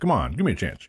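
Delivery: talking while eating, mouth full. Asking for a moment to answer, talking with mouth full. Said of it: "I got food in my mouth".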